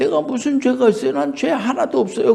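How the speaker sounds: high, indignant, protesting tone.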